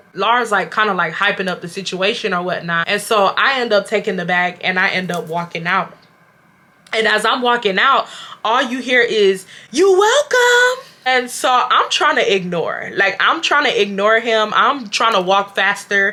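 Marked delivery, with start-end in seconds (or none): 9.7-10.9 put-on scream, higher and louder. Retelling how he kept calling out during the walk out: imitating him screaming. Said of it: "he's screaming it".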